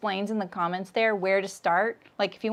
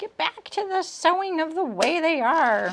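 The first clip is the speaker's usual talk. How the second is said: put-on witchy voice, pitched high; 7 semitones higher than usual. Voicing an imagined viewer who wants the sewing to continue: witchy voice. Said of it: "that witchy voice".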